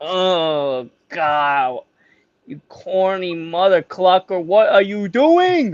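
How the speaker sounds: mock, very slow, cringing disbelief, long drawn oh. Imagining everyone reacting to the player's trophy pose: imitating everyone cringing. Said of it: "We're gonna this".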